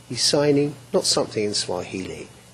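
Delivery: normal talking voice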